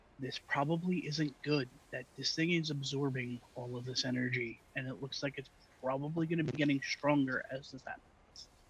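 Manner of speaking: soft, hushed half-whisper. Risking being overheard, a character speaks into the communicator, half-whispering. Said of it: "I hit the communicator thing and I whisper".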